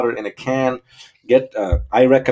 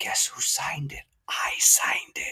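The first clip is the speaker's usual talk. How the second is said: eerie, creepy, breathy, very hushed whisper; 2 semitones higher, 10 dB quieter than usual. Retelling a speech where someone leans into the mic: imitating a creepy whisper. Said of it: "he's whispering".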